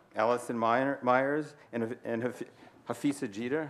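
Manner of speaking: stuttering and stumbling, halting speech. Thanking friends by name during an introduction, stuttering over names. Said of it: "I'm stuttering over that word".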